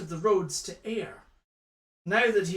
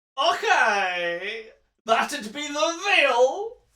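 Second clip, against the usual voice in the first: put-on high, slow old Scottish man drawl. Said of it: "a Scotsman who s-, who talks like that".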